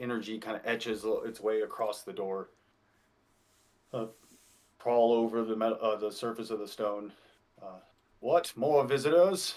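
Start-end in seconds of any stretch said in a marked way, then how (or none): 8.2-9.5 put-on crackly, crackling elderly man's voice. Narrating a story, an old man questions new visitors: crackling old man's voice. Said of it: "Questions the old man's voice with crackles".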